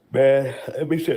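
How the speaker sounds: speaking through a yawn. Speaker in a group discussion, just after tiredness came up: yawning while talking. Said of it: "I'm yawning".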